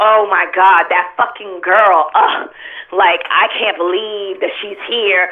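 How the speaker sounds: put-on whiny, complaining voice. Retelling what a woman said while complaining and whining: imitating someone complaining and whining. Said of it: "complaining and whining".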